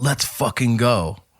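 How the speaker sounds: put-on scream. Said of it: "I'm screaming at the audience in between the songs".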